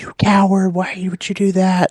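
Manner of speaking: very high-pitched, loud, shrill crowd screaming. Telling how people reacted after someone threw a rock, imitating people screaming. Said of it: "People are just screaming like".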